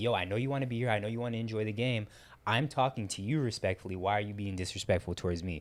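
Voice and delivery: normal talking voice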